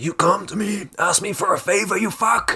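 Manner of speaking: very high, intensely angry, furious rant. Imitating a film character who flips to being intensely angry: imitating an intensely angry man. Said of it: "getting really, like, intensely angry".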